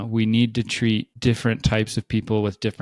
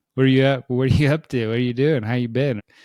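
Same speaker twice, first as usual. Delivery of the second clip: silly, casual, high-pitched and loud. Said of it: "Kinda like just being silly".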